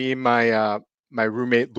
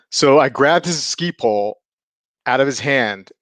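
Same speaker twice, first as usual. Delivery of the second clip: ordinary delivery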